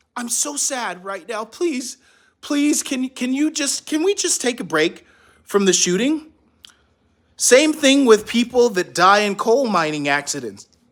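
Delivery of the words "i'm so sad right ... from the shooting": mock pleading, begging soldier voice. Acting out a soldier begging the enemy for a time out: mock pleading soldier. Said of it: "and then you say".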